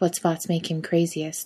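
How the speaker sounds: plain reading voice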